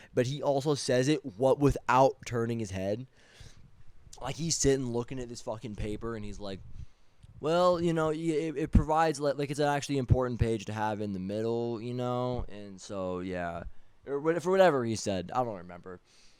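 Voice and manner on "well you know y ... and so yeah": ordinary talk, nothing marked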